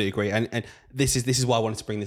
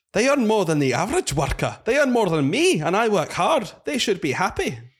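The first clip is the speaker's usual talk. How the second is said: very high, heavy, thick Scottish accent; 9 semitones higher, 4 dB louder than usual. Asked to say it again with a thicker accent, for the listeners. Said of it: "with a more thick accent?".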